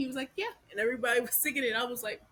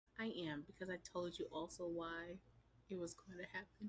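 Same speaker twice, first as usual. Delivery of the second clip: sexy, seductive voice, much quieter; 6 semitones lower, 16 dB quieter than usual. Answering whether they're happy to be right again, in a sexy voice. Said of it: "I have my sexy voice on".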